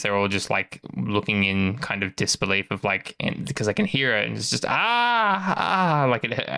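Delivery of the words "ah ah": high, labored, painful screams. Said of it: "it sounds like very labored, very painful screams".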